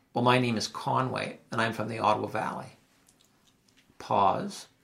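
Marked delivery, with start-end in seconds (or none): none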